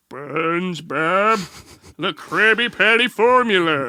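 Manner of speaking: very slow cartoon voice, every word dragged out. Doing impressions for the chat after doing Carl: Plankton voice. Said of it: "the normal talking Plankton".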